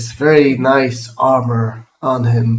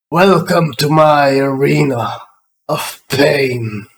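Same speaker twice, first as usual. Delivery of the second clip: grandiose, proclaiming ogre voice. Game master voicing an ogre addressing the players; loud thundering ogre voice. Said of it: "says in a very loud voice, kind of thundering".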